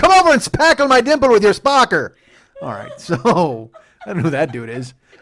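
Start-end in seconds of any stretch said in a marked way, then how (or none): 0.0-2.1 put-on very high, very loud, lecherous Irish character accent. Inventing a euphemism-spouting character on the spot, do an irish pervert voice. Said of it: "I like that Irish pervert".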